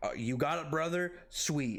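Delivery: plain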